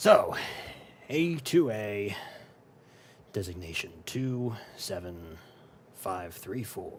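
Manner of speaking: stern, severe, slow male voice. Voicing a character who speaks up from behind the players: stern male voice. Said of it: "you hear from behind you a stern male voice".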